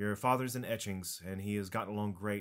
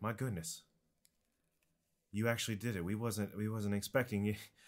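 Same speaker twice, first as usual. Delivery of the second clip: ordinary talk, nothing marked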